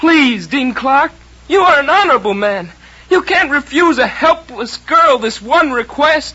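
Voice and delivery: heartfelt, theatrical pleading in a high voice. Rehearsing a girl pleading with Dean Clark not to expel her brother, voice pitched too high. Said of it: "don't try to make your voice so high".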